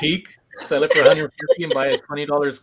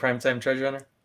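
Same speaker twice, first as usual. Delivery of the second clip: ordinary talk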